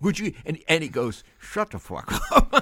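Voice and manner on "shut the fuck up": put-on side-of-mouth talk, much higher, louder, slower. Retelling what a little guy kept saying while checking out, talking out of side of mouth. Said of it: "He's going out of the side of his mouth".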